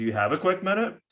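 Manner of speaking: super upbeat, perky, high, pitch rising on minute. Coaching how to ask for a quick minute, super perky, rising on minute. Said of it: "a super perky. ... kind of go up with the tone at the end here".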